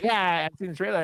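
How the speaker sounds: ordinary talk, nothing marked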